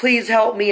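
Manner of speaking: put-on loud screaming. Retelling a hospital attack, imitating screaming for help. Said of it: "you're screaming for your life".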